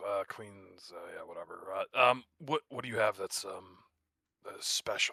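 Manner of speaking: eye-rolling, bored, dismissive tone. Playing a character who rolls his eyes at a baker: eye-rolling, dismissive in character. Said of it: "rolls his eyes and goes".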